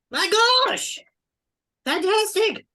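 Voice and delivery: very high-pitched, thrilled, excited cry. Voicing someone calling from a high window: excited voice from a window. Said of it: "you hear a voice go".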